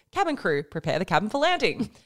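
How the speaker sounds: normal talking voice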